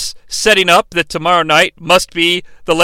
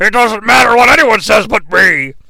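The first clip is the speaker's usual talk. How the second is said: strange, almost ghostly commentary voiceover voice; 3 semitones higher than usual. Retelling a match segment, quoting a voice heard over commentary: imitating a very weird voice. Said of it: "we hear a very weird voice".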